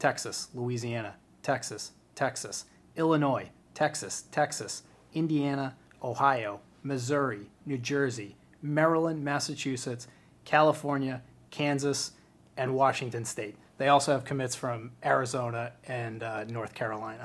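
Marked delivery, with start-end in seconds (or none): 0.0-13.5 voice like a sat-nav reading out places. Going down a list of states for a listener, sounding like a GPS system. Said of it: "You sounded like my GPS system".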